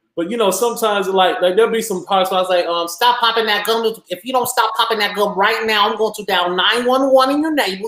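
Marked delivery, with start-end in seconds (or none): 2.9-7.9 high-pitched, bossy voice. Guest asked for a Madea impersonation slips into character: Madea impersonation. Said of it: "your Medea impersonation".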